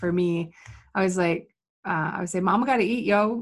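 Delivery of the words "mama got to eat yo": acted, half-joking, tongue-in-cheek sarcastic throwaway delivery. Retelling what they say about getting paid: imitating own sarcastic line.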